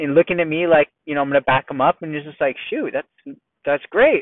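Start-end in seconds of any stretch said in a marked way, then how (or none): 2.7-4.2 mock unbothered, plain-spoken, matter-of-fact tone. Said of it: "so matter of fact".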